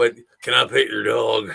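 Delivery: put-on southern drawl accent. Testing whether the voice works on a simple question, put-on southern accent. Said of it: "my southern accent".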